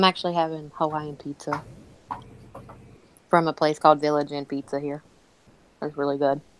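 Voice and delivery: low voice, talking through a mouthful. Chatting with Tara and friends, apologizing, talking while eating. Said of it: "sorry I'm eating".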